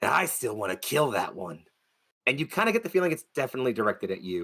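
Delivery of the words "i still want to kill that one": rough, gruff character voice. A game master voices someone behind Wolf as the group walks away: gruff, higher-pitched voice. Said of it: "that kind of gruffer, higher pitched voice".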